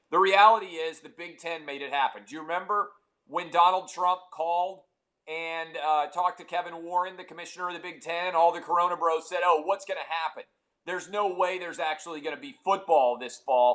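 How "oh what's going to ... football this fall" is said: usual speaking voice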